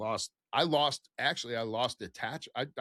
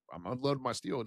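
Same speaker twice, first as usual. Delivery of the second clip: ordinary talk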